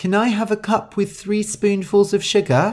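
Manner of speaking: squeaky, high-pitched character voice. Narrator reads Shu's line in the story, high-pitched voice. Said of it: "Shu said in her high-pitched voice".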